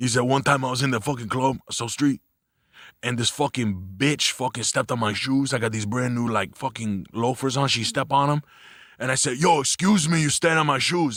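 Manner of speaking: put-on Dominican accent, male voice. Retelling a Dominican guy's club story in his voice, impression of a Dominican guy. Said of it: "He talks like this".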